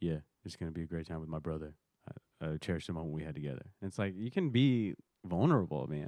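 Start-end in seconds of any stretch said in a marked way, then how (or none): 0.0-3.6 low, level, flat, emotionless voice. Retelling a post-game answer by LeBron James: imitating LeBron with no emotion. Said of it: "he just gave, like, no emotion".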